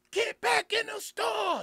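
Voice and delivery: play-acted, very high, loud shout. Retelling the moment armed men startled his wife on the stairs: retelling a loud yell. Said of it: "I yelled out".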